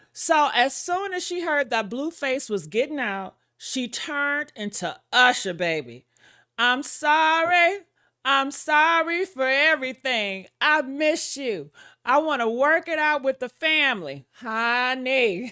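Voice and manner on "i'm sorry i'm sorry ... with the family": put-on weepy crying voice, "sorry" drawn out. Retelling a plea to make up with an ex: imitating someone crying. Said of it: "she was crying like".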